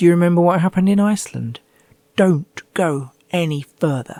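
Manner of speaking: tiny wee voice, calling out. Retelling how their own ribs spoke to them on a slippery patch, small little voice. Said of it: "called out in a little voice".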